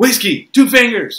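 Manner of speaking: very high, very loud, shrill barking voice. Retelling a father's demands at dinner: imitating someone barking orders. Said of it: "my dad barking orders at me".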